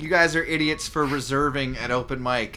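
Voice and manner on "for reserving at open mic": ordinary talk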